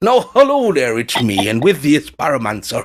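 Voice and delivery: put-on lovely Irish accent like a TV presenter. Imitating the presenter Terry Wogan's greeting: Terry Wogan impression. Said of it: "Lovely Irish accent".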